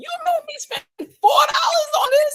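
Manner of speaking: acted-out, shrill, very high, furious shouting rant. Retelling how a mother burst in, imitating an angry mother. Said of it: "And she went off".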